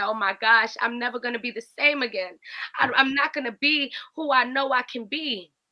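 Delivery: speaking through tears, acted, tearful crying delivery. Retelling own words from a grieving moment: reenacting speaking while crying. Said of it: "I'm crying and I said".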